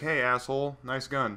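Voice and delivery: ordinary talk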